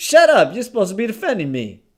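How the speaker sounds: put-on shouting. Acting out an argument over music with two others: acted yelling. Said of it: "Who you yelling at?".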